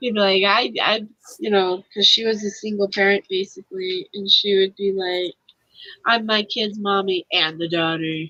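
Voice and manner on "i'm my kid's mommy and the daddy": put-on deep voice, pitched way down. Recalling a single mother's saying about her kid, imitating her low voice. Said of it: "her voice could go so low".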